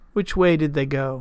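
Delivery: ordinary delivery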